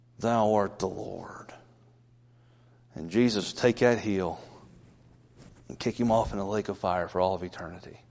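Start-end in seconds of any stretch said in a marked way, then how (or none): 0.2-1.5 put-on gritted teeth, much quieter and slower. Acting out someone forced to bow the knee, mock clenched-teeth speech. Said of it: "he'll say through clenched teeth".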